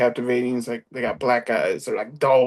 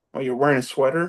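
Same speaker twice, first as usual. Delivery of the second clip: quiet, put-on voice. Retelling a line from a film scene, quietly imitating Brody. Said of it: "you hear Brody say very quietly".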